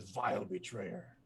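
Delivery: growling. Narrating what a creature says in Infernal, growling. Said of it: "he growls out something".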